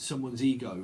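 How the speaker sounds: usual speaking voice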